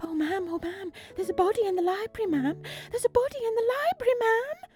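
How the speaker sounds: gasping, breathless, hysterical panic, very high and rising. Reading a story aloud, narrator voices a character reporting a body: breathless and hysterical. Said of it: "breathless and hysterical".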